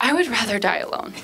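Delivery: acted-out solemn, grave, dead-serious tone. Retelling the speaker's reply after turning to him, retelling in a serious voice. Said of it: "in a serious voice".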